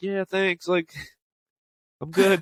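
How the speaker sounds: put-on laid-back, unbothered, slow, mellow voice. Retelling how the women answered a club guy's greeting, imitating a mellow reply. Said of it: "they were like very mellow".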